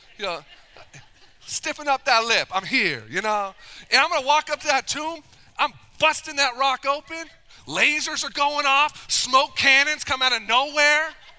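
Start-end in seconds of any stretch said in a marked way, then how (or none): 1.5-3.0 mock cocky swagger, higher and louder. Acting out walking into the tomb with put-on swagger. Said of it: "some swagger".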